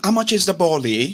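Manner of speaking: put-on London accent. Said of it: "They don't get accent. Innit?".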